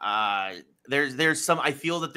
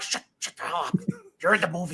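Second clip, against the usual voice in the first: put-on high-pitched old man voice, scolding; 5 semitones higher than usual. Retelling telling off kids talking during a movie: retelling yelling at kids. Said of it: "I still think you could yell".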